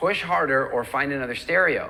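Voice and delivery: normal talking voice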